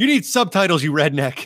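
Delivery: jeering, heckling yell. Retelling ribbing a podcast host on his show: retelling a yell. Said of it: "me and Alex yelling".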